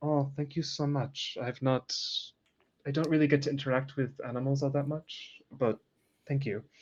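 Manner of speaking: very strong put-on French accent, laid on thick. Speaker retells a woman's thank-you, in a very french accent. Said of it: "She says this in a very French dialect".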